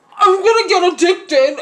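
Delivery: muffled mouth-full speech. Retelling own words after anesthesia, imitating talking with mouth full of gauze. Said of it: "with my mouth stuffed with gauze".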